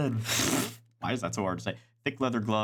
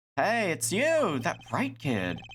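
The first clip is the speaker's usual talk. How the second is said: put-on serious, bored, high dandy-girl drawl; 7 semitones higher than usual. Voicing a game character who greets the hero: bored dandy girl voice, more serious. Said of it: "What voice did I give her?".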